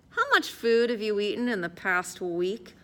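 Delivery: plain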